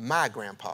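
mock firm, low, stern delivery. Retelling what she said sternly to the other one wanting the speaker's lap, mock-stern. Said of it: "she says sternly".

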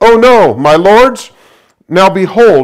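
high-pitched, loud, pleading crying voice.

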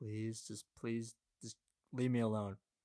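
acted-out panicked, pleading tone. Retelling her own plea to him, re-enacting a panicked plea. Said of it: "So I'm just going".

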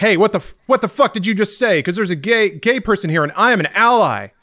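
high, loud angry yell. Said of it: "yelled at me".

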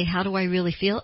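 ordinary talk, nothing marked

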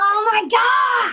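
loud, drawn-out mad yell. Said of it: "I'm getting so mad right now".

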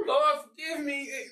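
put-on weepy crying voice, high and tearful, pleading. Retelling praying the morning after a night out: imitating own crying prayer. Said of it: "I'm in here crying and talking about".

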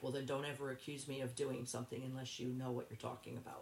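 normal talking voice

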